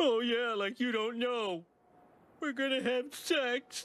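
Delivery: tearful, very high, sobbing voice. Asked what's wrong, he answers: crying. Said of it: "(Homer crying)".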